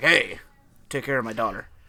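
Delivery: friendly, approving dad tone.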